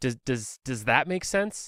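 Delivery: put-on soft, hesitant, stumbling, uncertain pleading. Retelling how a man asked the speaker a question, imitating an uncertain, pleading tone. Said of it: "a really uncertain look on his face".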